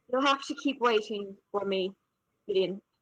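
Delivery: very soft, hushed, under the breath. Playing a character on the ground, answering a vanished figure: very quiet voice. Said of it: "just say very quietly".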